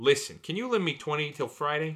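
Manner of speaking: put-on New York Brooklyn twang creeping in. Playing a character in a scene with a partner, slipping into a Brooklyn accent. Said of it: "You keep going into Brooklyn".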